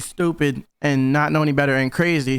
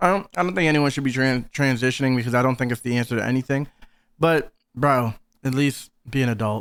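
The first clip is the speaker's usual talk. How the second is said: ordinary talk, nothing marked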